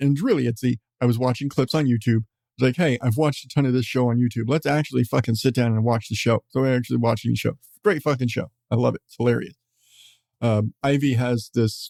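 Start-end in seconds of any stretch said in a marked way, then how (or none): none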